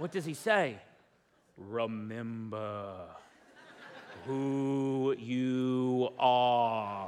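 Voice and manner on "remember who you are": very low, deep, very slow, stretched out. Retelling a scene from The Lion King, imitating Mufasa's voice. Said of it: "that's James Earl Jones, and he has a way better voice than I do".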